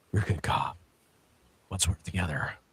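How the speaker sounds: hushed, deep whispered voice. Imagining Bruce coming up behind Gordon on a rooftop: deep Batman voice. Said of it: "try to speak in that deep voice".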